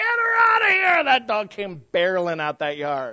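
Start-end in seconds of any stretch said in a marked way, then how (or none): 0.0-1.0 very high, loud shrieking scream. Recounting a preacher yelling from inside the house, imitating his scream. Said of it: "the preacher's voice screaming".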